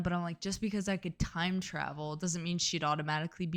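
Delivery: plain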